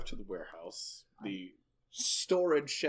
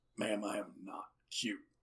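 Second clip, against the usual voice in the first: put-on gruff, rough-voiced tiny old man voice; 3 semitones lower, 8 dB quieter than usual. A tiny old man answers a woman who calls him cute, gruff voice. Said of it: "with your gruff voice".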